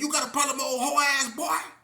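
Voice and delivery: play-acted, very high, loud, cocky, confident. Retelling a dorm fight, imitating the other resident's taunt: imitating a confident taunt. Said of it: "And the way he said it".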